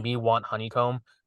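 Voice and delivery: ordinary talk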